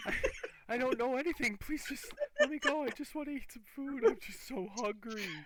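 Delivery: shrill, very loud, desperate and terrified tone. Pinned against the wall by two interrogators, the elf begs: frightened elf pleading for life. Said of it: "little short elf that's just fearing for his life".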